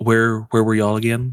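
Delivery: quiet muttering under the breath. Asking a lord in character while the others talk: muttering under the breath. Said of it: "under my breath".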